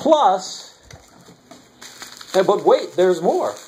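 80s TV infomercial sales announcer voice. Showing off collected coins, in an 80s infomercial voice. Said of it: "I sound like the old 80s infomercials".

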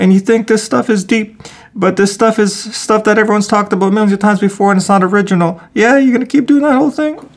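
very high-pitched, needling, passive-aggressive put-down tone. Acting out how people needle the speaker about the YouTube channel: imitating passive-aggressive taunting. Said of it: "the passive aggressiveness goes like this".

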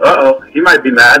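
ordinary talk

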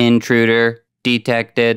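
deadpan monotone robot voice. A tutorial plays the original robot vocal before replacing it, in a monotone robot voice. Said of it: "just kind of like a regular monotone robot vocal".

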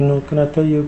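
small, soft, meek, timid, wimpy voice. Showing how not to talk to people: small, timid voice. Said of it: "talk to them in a small voice like".

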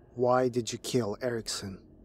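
plain reading voice

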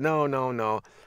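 ordinary delivery

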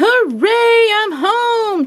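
gleeful, joyful, very high-pitched voice. The greedy bee, reaching the other side of the stream with the ants: cheering. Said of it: "cheered the greedy bee".

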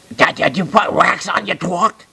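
high cartoon speech impediment, mouth stuffed full. Retelling what a man said while munching a corn dog, Elmer Fudd voice, mouth full. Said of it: "Sounded like Elmer Fudd eating a cracker".

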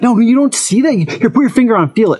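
mock pissed-off tone. Retelling a brother-in-law showing a ding on his car: imitating someone pissed off. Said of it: "He's all pissed off".

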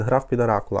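ordinary talk, nothing marked

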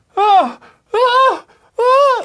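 high, loud scream. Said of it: "it changed to".

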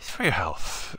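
breathy, half-whispered put-on voice, breathed out hushed. Asked to do an impression on the spot, in a Dr. Steve Brule voice. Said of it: "Can you do a Dr. Brule impression with your voice right now?".

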